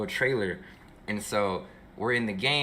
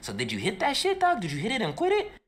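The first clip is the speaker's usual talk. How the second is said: put-on voice, very high-pitched with swooping intonation; 12 semitones higher than usual.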